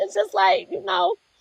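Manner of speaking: emotional voice pushed up high in pitch. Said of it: "I'm sorry, I'm getting emotional".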